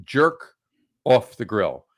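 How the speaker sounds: loud voice, deliberate pause after "jerk off". Naming a New York street food company, with pause after Jerk Off. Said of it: "I paused there purposely".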